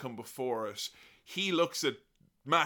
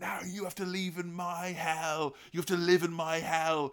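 acted, half-screamed, high-pitched ranting yell; 5 semitones higher than usual. Retelling a wrestler screaming at his beaten opponent, imitating someone screaming. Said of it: "start screaming".

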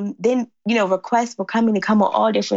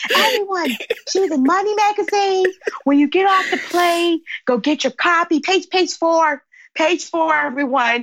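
mock yell, much higher in pitch; 8 semitones higher than usual. Retelling what a man yelled to everyone on the plane, retelling a man yelling. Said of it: "he yells to the plane".

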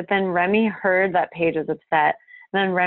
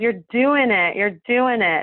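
put-on Brooklyn-style New York accent; 3 semitones higher than usual. Recalling how a woman talks, imitating her new york accent. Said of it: "That's her accent".

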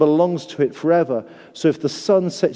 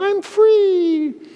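tiny, very high, squeaky goldfish voice. Speaker voicing a goldfish that leaps out of its bowl: squeaky goldfish voice. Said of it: "you'll hear a squeaky voice going".

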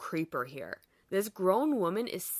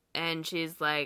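plain

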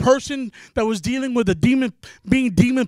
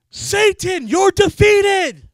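acted, sudden, raised, high, commanding yell; 8 semitones higher, 5 dB louder than usual. Retelling what a youth pastor shouted during worship: imitating someone yelling. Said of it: "one of the youth pastors yells".

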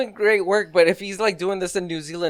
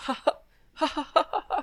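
high-pitched, soft, innocent little giggle. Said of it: "this little, like, innocent laughter".

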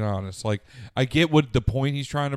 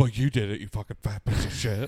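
put-on accusing voice. Imitating a friend shutting down after a joke: imitating Blake getting defensive. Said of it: "That impression was really good".

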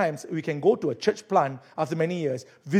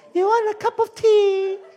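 put-on old lady voice, much higher, louder; 5 dB louder than usual. Retelling an elderly lady offering him tea, in an old lady voice. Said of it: "let me change my voice".

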